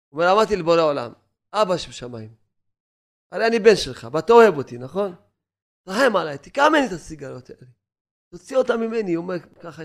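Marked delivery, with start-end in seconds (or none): none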